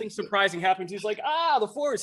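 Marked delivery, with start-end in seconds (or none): 1.2-2.0 put-on happy creature voice, pitched higher. Describing how Yoda reacts to surprises, imitating happy Yoda. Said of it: "he's all happy about it".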